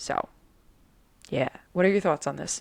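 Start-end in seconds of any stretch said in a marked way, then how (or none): 1.7-2.6 spoken with a New York accent. Asking another speaker for their thoughts on the topic: New York accent. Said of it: "I went really New York in that weird sentence".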